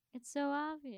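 sarcastic, dry tone. Answering the other speaker about an online quiz's options: sarcastic. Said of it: "I'm being sarcastic".

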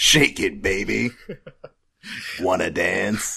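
macho action-hero voice. Quoting video game lines: Duke Nukem voice. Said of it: "I thought you were doing an impression".

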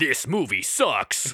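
acted robot voice. Joking about reviewing a movie as Optimus Prime: Optimus Prime voice. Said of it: "you gotta do the whole review as Optimus Prime".

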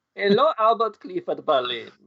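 fake, very high-pitched German accent. Answering a request to say the name with a german accent: put-on german accent. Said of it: "German accent there".

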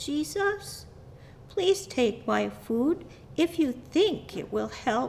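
put-on timid, small, nervous, high little-child voice. Reading a story aloud, a boy offers Jesus his food: small nervous voice. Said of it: "the boy looked very nervous as he said in his small voice".

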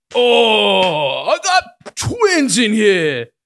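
bad, booming, slow voice, "oh" stretched out. Continuing the impression for guessers: bad Tracy Morgan impression. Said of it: "that's bad".

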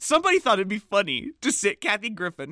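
ordinary delivery

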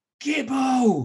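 giddy, very loud, very high-pitched shout. Retelling a night out, calling to a friend: retelling a shout.

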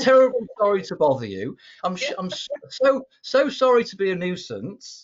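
high, drawn-out, profusely apologetic, stumbling over words. Retelling a phone call asking for help, imitating own very apologetic self. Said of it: "so very apologetic".

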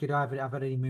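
usual speaking voice

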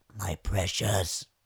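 low, dropped put-on voice. Asked by a co-host to say the phrase in that voice, in Gollum voice. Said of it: "Kan du säga My Precious med den där rösten?".

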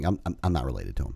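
mock deadpan, very low and hushed. Retelling his own answer about not being related to the manager, recreating a deadpan reply. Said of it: "I'm kind of deadpan in a straight face".

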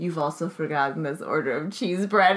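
mock solemn, grave, serious, dire tone. Imitating a ghost employee imparting serious knowledge: imitating a serious warning tone. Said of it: "serious knowledge on everyone".

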